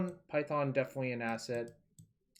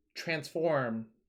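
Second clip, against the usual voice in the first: transform said firmly with falling pitch. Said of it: "export transport load is correct".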